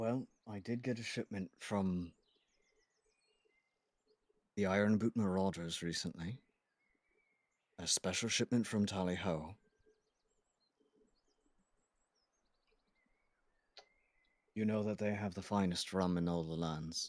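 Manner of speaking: hushed, quiet voice kept under the breath. The one serving drinks looks around, then answers the rum question in a hushed tone. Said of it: "and again in a hushed tone".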